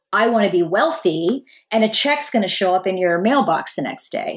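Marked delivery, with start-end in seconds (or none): none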